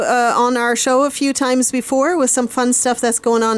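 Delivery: plain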